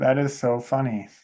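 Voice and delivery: plain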